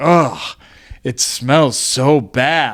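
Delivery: very drawn-out, slow, forceful, aggressive complaining tone. Retelling a car passenger's complaint about a smell, imitating Clementine's aggressive complaint. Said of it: "started getting more aggressive about it".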